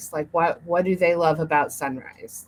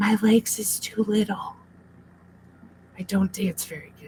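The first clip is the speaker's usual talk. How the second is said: soft whispered voice; 3 semitones higher than usual. Answering an invitation to dance, she whispers back. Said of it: "She whispers back".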